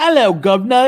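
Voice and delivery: high, loud, over-the-top exaggerated stock British accent. Discussing accents, show how a regular american does a british accent. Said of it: "what's your British accent?".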